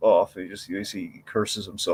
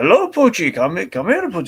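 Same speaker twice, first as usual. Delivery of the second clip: put-on high, lilting French accent; 9 semitones higher, 8 dB louder than usual. Imitating a mime walking a dog: Albert Brooks's French-sounding mime voice. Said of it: "a very foreign French-sounding guy who would just announce everything".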